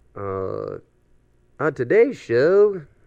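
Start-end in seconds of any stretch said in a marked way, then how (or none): 1.6-2.8 silly put-on goofy voice, high and very loud. Opening the show's rundown, joking around: goofy voice. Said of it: "I always do a goofy fucking voice like that".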